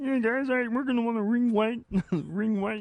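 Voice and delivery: very high, slow, loud, drawn-out frog voice. Retelling how a quarterback talks in the huddle: Patrick Mahomes impression, frog-like. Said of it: "He sounds like a mixture of Alex Jones and Kermit the Frog".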